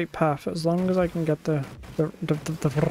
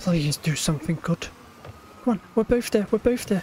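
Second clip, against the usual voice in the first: panicking, panicked tone; 3 semitones higher than usual. Player nearly at a checkpoint in a game, panicking. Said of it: "I'm panicking".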